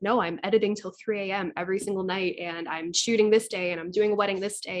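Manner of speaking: plain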